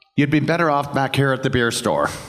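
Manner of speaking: put-on Irish accent. Quoting a man's remark in a story, irish accent. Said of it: "in the inimitable Irish accent".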